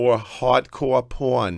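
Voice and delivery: horrible put-on Long Island accent. Closing an interview, saying the show's name as your girlfriend would, in a horrible Long Island accent. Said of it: "with the horrible Long Island accent".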